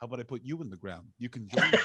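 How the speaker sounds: low movie-style voice. Recounting a remembrance gathering where she overheard someone, imitating their low voice. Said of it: "I heard someone with that low voice being like".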